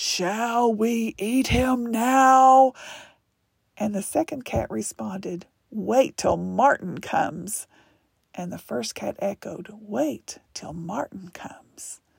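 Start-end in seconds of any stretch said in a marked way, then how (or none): 0.0-2.7 very slow, drawn-out rumbling voice. The largest cat speaks to the other cat over the preacher, rumbling. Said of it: "the largest cat rumbled".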